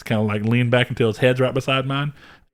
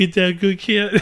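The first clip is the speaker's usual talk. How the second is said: mock baby talk, higher; 7 semitones higher than usual. Imitating the other speaker talking to their cat: imitating baby talk to a cat. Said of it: "you baby talk your cat".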